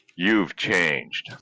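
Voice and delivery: mock condescending, disapproving tone. Retelling how a friend remarked on the change: imitating a condescending tone. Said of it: "Just like that".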